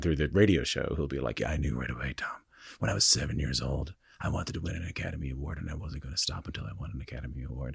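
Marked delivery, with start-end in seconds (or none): 1.4-7.8 rough, creaky put-on voice, driven. Imitating a driven guest on a radio show: imitating a driven interviewee. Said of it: "I don't know whose voice that is".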